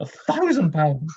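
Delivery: put-on high-pitched, grumbling, complaining old lady voice. Showing the old woman voice from the album's end: old woman voice from Sorry I've Got No Head. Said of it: "the old woman at the end".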